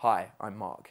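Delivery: very low, soft, deep big-guy voice. Telling a story about a man's opening line to women, imitating Mark's deep voice. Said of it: "He has a deep voice".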